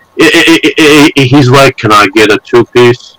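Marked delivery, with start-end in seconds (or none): 1.8-3.0 words tripping out in a low, stumbling mumble. Retelling a man stumbling over his words at the window, imitating someone mumbling. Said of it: "Like mumbling".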